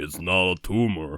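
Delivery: put-on deep, very slow voice, every word dragged. Doing a Schwarzenegger quote in a Sylvester Stallone voice. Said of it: "do an Arnold Schwarzenegger quote with Sylvester Stallone's voice".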